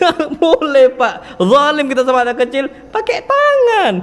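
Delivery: emphatic scolding, high-pitched and loud.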